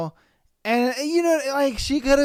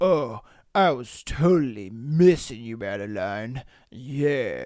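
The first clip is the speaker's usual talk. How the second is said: very low, very slow, overdone fake-deep eighties douchebag voice; 11 semitones lower than usual. Mocking how a male character sounds: imitating an eighties douchebag. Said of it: "he sounds like an eighties douchebag".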